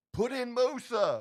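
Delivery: very high, loud yell. Retelling a call to the coach during the game: retelling own yell. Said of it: "And I yell out to him".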